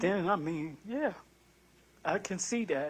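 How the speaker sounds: with emotion. Person answering personal questions in an interview, getting emotional. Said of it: "I'm sorry for getting emotional".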